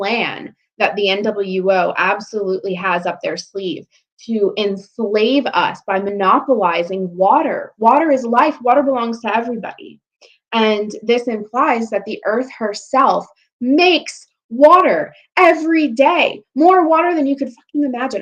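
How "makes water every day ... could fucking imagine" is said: high-pitched ranting rising close to yelling. A mother addressing listeners, yelling. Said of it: "I'm sorry, I'm yelling".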